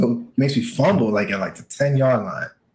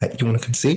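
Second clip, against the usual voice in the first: usual speaking voice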